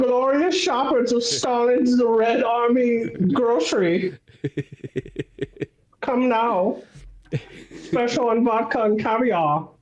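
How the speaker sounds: put-on comic-book German accent. Playing a grocery store announcer addressing shoppers, in a comic-book german accent. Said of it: "comic booky, like German accent".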